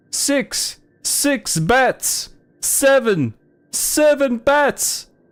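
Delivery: very high, very slow put-on vampire voice. Showing the voice done for Count Chocula: Count Chocula vampire voice. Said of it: "When I'm doing a vampire voice for Count Chocula".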